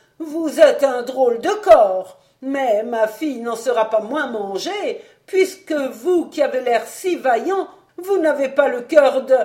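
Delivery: loud, high, ringing outcry. The tempter pressing Tremeur after he refuses to get involved, crying out. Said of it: "s'écria le tentateur".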